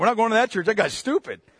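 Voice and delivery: plain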